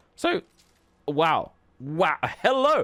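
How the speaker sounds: loud, high voice breaking. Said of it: "I'm getting voice cracks".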